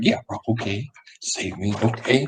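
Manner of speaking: hushed whisper. Voicing a character heard over the comms: whispering over the comms.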